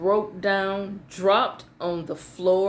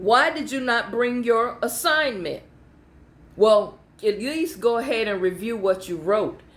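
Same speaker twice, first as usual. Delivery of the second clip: normal talking voice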